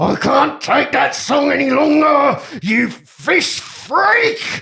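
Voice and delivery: all-out enraged, furious, high-pitched scream. Voicing a fishmonger who snaps at a neighbouring stall: screaming in anger. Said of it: "and he screams".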